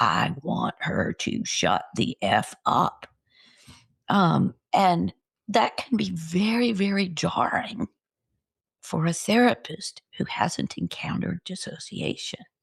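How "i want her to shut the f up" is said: very harsh, very low, slow altered voice. Retelling what a voice that wasn't hers said, in a very harsh voice. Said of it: "a very harsh voice that said".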